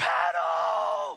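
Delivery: very loud, raw, rough, desperate scream. Retelling how a friend in the canoe front yelled back: imitating a scream. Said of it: "he screamed".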